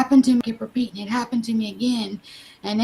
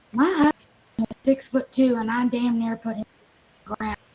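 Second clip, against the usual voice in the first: plain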